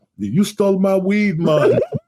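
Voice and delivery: put-on very high, drawn-out, slow Jamaican accent. Retelling how a weed dealer blamed his girlfriend: imitating a Jamaican accent. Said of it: "he spoke with a Jamaican accent".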